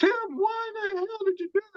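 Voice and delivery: very high-pitched mock screaming. Retelling the moment, the speaker quotes her screaming at him again: imitating someone screaming. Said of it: "she's screaming again".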